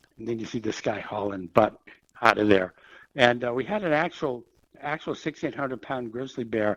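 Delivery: ordinary talk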